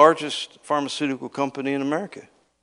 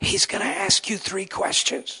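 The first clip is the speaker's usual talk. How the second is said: whispering under the breath, hushed; 8 semitones higher than usual. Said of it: "and he's whispering".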